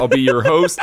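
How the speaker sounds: plain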